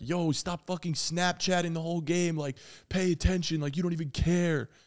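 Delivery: mock heckling rant, put-on screaming. Retelling how a fan two rows back yelled at them: imitating a man screaming. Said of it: "was screaming at me".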